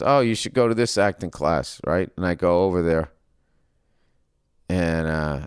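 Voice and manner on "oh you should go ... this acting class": ordinary delivery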